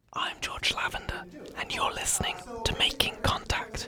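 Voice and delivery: very quiet, soft, hushed whisper. Podcast host opening an episode at an art exhibition opening, whispering. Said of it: "I'm whispering".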